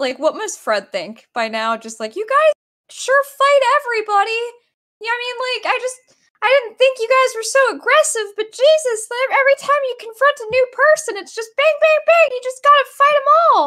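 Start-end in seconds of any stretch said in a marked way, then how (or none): 2.2-13.7 put-on cartoon mouse voice. Voicing Fred, who remarks that the group fights everybody: Mickey Mouse voice. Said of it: "I was turning Mickey Mouse even".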